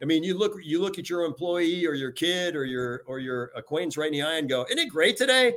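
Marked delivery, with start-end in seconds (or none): 4.7-5.5 very high, loud, passionate, upbeat enthusiastic exclamation. Showing how to greet an employee on a gross day: passionate and positive. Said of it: "communicating with passion".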